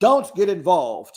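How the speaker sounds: put-on deep English accent. Retelling a woman answering the man who calls her honey: Stanberry's deep English-rooted voice. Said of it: "She uses her deep English rooted voice".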